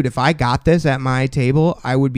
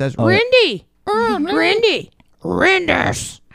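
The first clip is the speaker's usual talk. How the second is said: very high, stretched-out, swooping creature squeal. Imitate her as a creature that can only say its own name, in a Pokemon voice. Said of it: "all Pokemons can say is their own name. So she says".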